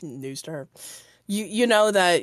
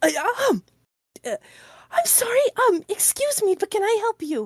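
startled woman voice, much higher. Narrating a scene, voicing a servant woman the party startles in the entryway: startled servant woman. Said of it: "And you startle her".

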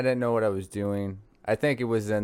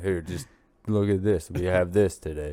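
voice dropped very low, super deep; 3 semitones lower than usual. Retelling how a vape store worker talks: imitating a super deep voice. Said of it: "Is it, like, super deep?".

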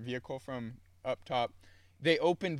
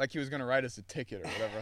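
plain

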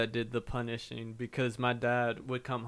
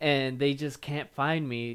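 usual speaking voice

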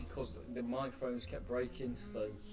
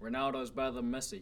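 attempted American accent. Doing a voice meant to be the listener: wannabe American accent. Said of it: "You sound like a wannabe American".

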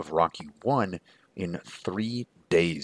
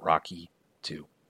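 plain

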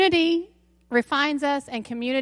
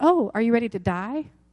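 ordinary talk

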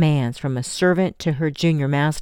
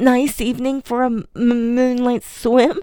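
pitched-up voice through chattering teeth; 9 semitones higher than usual. Narrator reads a soaking wet boy joking to the cook, through chattering teeth. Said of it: "he joked through chattering teeth".

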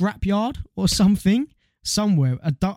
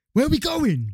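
mock shout, really loud and high; 8 semitones higher than usual. Retelling a friend shouting a question in his sleep: imitating someone shouting. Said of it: "he said really loudly".

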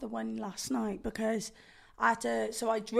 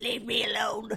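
put-on creature voice, slower. Describing crawling back to bed on a low-energy day, in a Gollum voice. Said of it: "You're like Gollum".

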